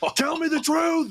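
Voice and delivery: very high, angry yelled voice. Demanding the truth from him as the flame grows on his shoulders, yelling. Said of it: "And I'm just yelling at him".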